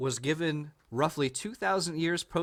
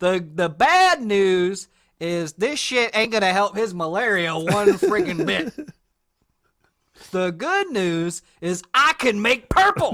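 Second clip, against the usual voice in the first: booming, very loud, fake Southern US accent; 4 semitones higher, 9 dB louder than usual. Retelling what a man tells a parent about a sick son, in a put-on Southern US accent. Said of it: "I don't know why I made him Southern".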